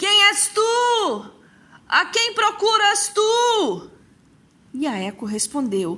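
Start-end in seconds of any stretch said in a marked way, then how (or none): 0.0-3.9 very high calling out, tu drawn out. Narcissus, seeing no one among the trees, shouts again: shouting. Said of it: "Narciso gritou novamente".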